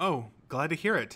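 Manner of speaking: relieved, easy tone. Answering a girl who says his hand helped her, with a relieved smile. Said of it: "he said with a relieved smile".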